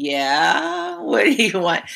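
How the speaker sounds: put-on slow, wary, guarded, suspicious sing-song. Retelling how callers answered the phone: imitating a suspicious answer. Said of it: "there'd be this sort of suspicious".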